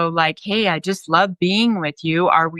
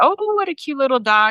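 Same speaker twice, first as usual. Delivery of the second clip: put-on cooing baby talk, high and quick; 7 semitones higher than usual. Retelling ladies in a store talking to a Yorkie by the register, imitating baby talk. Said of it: "baby talk to".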